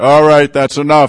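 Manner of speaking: military-style shout at full volume. Retelling calling up to people stripping copper, in commanding Marine Corps voice. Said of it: "in my best voice, Marine Corps voice".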